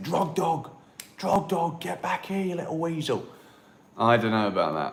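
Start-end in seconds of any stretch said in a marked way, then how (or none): 0.0-3.2 mock shouting, high-pitched yell. Acting out calling a runaway dog back on the beach: imitating screaming at a dog. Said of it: "screaming at him for running away from me".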